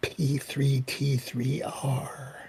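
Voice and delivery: hushed, drawn-out delivery. Asking in character about someone's whereabouts: lowered voice. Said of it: "and I lower my voice".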